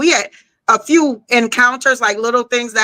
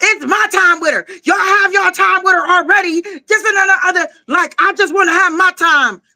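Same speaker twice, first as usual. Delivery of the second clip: play-acted high, screamed rant; 7 semitones higher than usual. Retelling how a man screamed at a lady: imitating a man screaming. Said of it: "Literally just start screaming at this lady".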